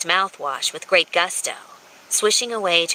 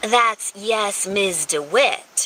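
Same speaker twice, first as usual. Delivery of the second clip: drawn-out, very slow, sassy tone; 4 semitones higher than usual. A woman corrects her drunken ex-lover's reply, in a sassy voice. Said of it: "she corrected in a sassy voice".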